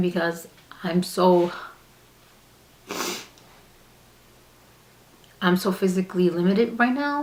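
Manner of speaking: voice strained from holding back tears. Talking about being physically limited and relying on help: holding back tears. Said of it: "I'm trying hard not to cry right now".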